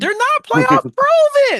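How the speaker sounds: put-on, complaining coach-type voice. Retelling a fellow coach questioning a playoff pick: imitating Coach Leslie's voice. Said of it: "That's how he sounds when he speaks".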